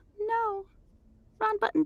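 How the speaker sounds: very high, puzzled, confused character voice. Rolling dice and hitting the wrong button, in a confused voice. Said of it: "This is [name]'s confused voice".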